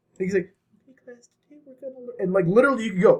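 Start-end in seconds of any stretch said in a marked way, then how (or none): 0.9-2.2 barely audible, tiny, mouse-like squeaky voice. Imitating a lecturing teacher who speaks like a mouse: quiet mousy voice. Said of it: "he speaks like a mouse".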